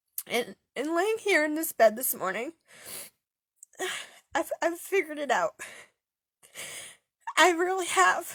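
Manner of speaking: tearful joyful voice. Recounting that this morning they figured it out, crying happy tears. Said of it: "I'm not crying because I'm sad. I'm crying because I'm actually happy".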